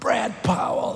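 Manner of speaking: acted high scream. Retelling how a woman screamed a name across the church lobby: retelling a scream. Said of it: "she screamed across it".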